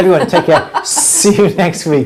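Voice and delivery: laughing.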